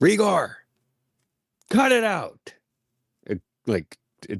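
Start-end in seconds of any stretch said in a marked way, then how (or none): 0.0-2.5 very high, drawn-out, scolding yell. Yelling at a fighting dragon to make it stop: yelling at a dragon. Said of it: "I'm just gonna yell".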